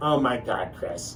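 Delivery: ordinary delivery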